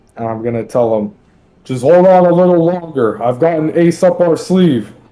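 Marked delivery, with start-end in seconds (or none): 1.7-4.9 calling out loudly, high. Yelling out to an ally to hold on a little longer: yelling out to him. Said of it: "I'm gonna yell out at him".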